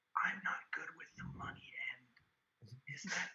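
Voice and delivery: speaking softly. Turning to the band in character: soft voice. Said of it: "in a soft voice".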